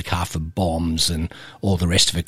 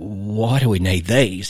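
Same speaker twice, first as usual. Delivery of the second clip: mock trembling, slow, shaky, frightened voice; 2 semitones higher than usual. Retelling what the other man asked after being handed guns, imitating a shaky voice. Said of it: "in a really shaky voice".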